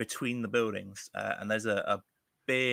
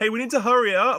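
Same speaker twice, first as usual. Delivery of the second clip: very loud, high-pitched hollering call; 13 semitones higher, 11 dB louder than usual. Acting out a character calling up a fire escape: yelling up. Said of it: "you're yelling up".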